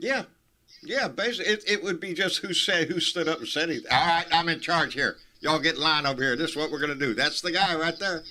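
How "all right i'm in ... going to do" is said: mock bossy loudmouth voice. Imitating a militia leader taking charge, imitating a loudmouth giving orders. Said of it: "Just whoever's the biggest loudmouth".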